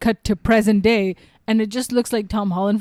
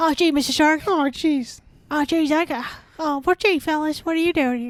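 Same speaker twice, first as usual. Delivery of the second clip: high-pitched cartoon schoolboy voice; 6 semitones higher than usual. Joking about how an actor in a film would sound the whole time, Butters voice. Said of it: "he would sound like Butters the whole time".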